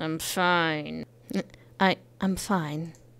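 put-on lying tone. Speaker acts out their own past reply, said like a liar. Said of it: "I said, you know, like a liar".

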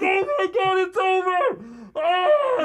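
play-acted very high, very slow, drawn-out panicked wail. Retelling dropping to all fours on the ice: retelling own panicked cry. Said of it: "I got into that real panic mode".

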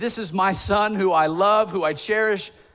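put-on booming heavenly voice. Quoting a voice from heaven about a son: imitating a booming voice from heaven. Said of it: "booming voice from heaven would say".

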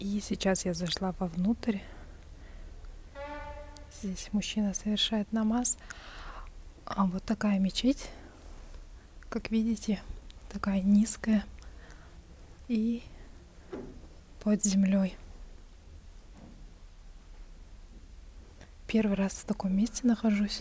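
speaking in a whisper. Inside an underground mosque where a man is praying, showing viewers around, whispering. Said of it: "Шепотом говорю".

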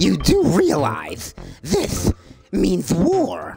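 imitated cartoon duck voice. Moving on to level five in a game, Daffy Duck voice. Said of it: "That's my best Daffy Duck".

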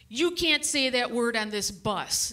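ordinary talk, nothing marked

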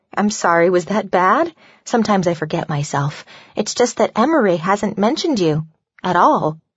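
plain reading voice

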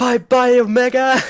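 very high, shrill, piercing, loud screaming yell. Recalling how Mania screamed each time Omega died, imitating Mania screaming. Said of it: "Mania would just scream".

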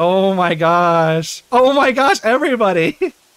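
emotionally overwhelmed. Streamer thanking new followers on a live stream, overwhelmed. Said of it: "I am so overwhelmed right now".

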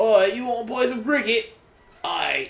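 poor put-on English accent. Joking with viewers about playing cricket, in a horrible English accent. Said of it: "my horrible English voice".

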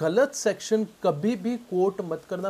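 deliberately slow, deliberate tone.

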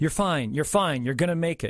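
ordinary delivery

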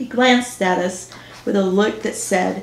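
plain reading voice

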